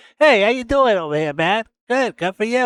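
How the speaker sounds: tiny mobster voice. Speaker shows how he would really talk, in a Tony Soprano voice. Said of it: "I'm like a midget Tony Soprano".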